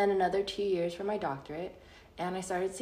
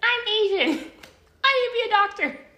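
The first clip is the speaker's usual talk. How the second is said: goofy put-on voice, very high, loud and booming; 10 dB louder than usual. Retelling their younger self's thinking back in the day, in a put-on voice. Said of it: "sorry i don't know why i did that voice".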